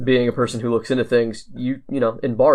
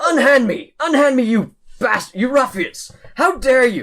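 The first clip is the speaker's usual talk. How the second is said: outraged, very high-pitched furious yelling; 13 semitones higher, 3 dB louder than usual. Voicing a prisoner thrown into a cell by guards: cursing, furious prisoner yelling. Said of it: "a man is cursing and cussing at".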